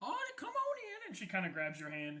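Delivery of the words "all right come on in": put-on very high, little old elf woman voice. Voicing a short old elf lady greeting someone who came to sign up: old elf lady voice. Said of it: "short, fat old lady, um, elf".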